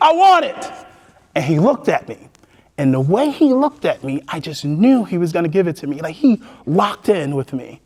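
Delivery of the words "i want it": acted, shrill, very high, desperate cry. Retelling jumping up in class for the money: imitating own screaming. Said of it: "jumping up and screaming".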